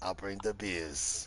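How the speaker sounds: put-on New Jersey accent. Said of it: "he says it with that Jersey accent".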